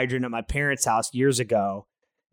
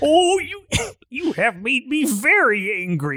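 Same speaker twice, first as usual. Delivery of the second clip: very high, swooping, stretched-out cartoon alien voice; 11 semitones higher than usual. Joking around with friends: Marvin the Martian voice.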